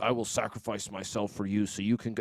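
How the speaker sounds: big robot leader voice. Retelling a movie's end scene where Optimus Prime tells everybody to run: Optimus Prime voice. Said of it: "his Transformer voice".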